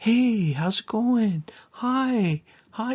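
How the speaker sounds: put-on very high, very slow baby talk with long vowels. Showing how a listener would greet Evie when introduced to her: higher-pitched, softer voice. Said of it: "Your voice will probably get higher pitched".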